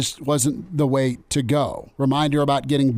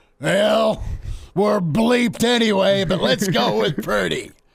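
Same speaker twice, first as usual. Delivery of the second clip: angry, ticked-off tone, voice pitched a bit higher; 7 semitones higher than usual. Answering a question about the quarterback at halftime: pissed-off Whip impersonation. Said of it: "it's my Whip impersonation".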